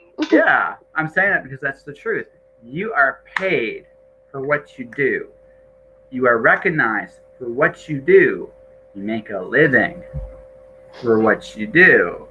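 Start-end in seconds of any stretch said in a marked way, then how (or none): 2.7-12.2 very slow, measured, weighty and deliberate delivery. Speaking to an audience to drive a point home, very slow and deliberate. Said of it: "I'm making this very slow and deliberate".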